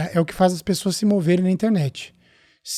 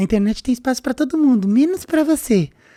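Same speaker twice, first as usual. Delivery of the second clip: small, higher, needling nagging voice; 5 semitones higher than usual. A creator acts out the voice of fear in their head; voicing the little inner voice. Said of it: "a vozinha tá aqui falando".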